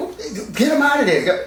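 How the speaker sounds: high-pitched, laughing, exasperated tone.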